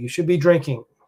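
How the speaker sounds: plain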